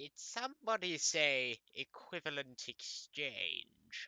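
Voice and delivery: very slow character voice, every word drawn out. Voicing a talking poster that interrupts: Emperor Palpatine impression. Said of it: "doing an impersonation of Emperor Palpatine from Star Wars".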